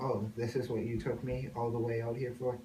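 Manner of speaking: ordinary delivery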